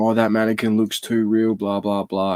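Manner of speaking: usual speaking voice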